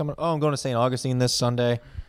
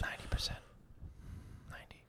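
unvoiced whisper. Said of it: "Why are you whispering?".

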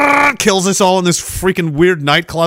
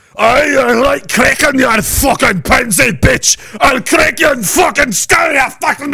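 mock yelling in a pitched-up Scottish accent; 8 semitones higher than usual. Retelling a bald man yelling at the speaker's group, imitating a Scottish man yelling. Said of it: "he's like yelling at us in Scottish".

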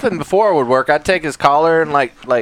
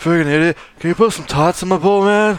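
fake silly teenager voice; 2 semitones higher than usual. Giving the Great Dane a voice: Napoleon Dynamite voice. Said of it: "The Great Dane is Napoleon Dynamite".

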